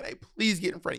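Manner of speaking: put-on breathy, frantic, fast panicked pleading. Retelling a panicking lady's plea at the airport: imitating a panicking woman. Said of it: "The lady's panicking".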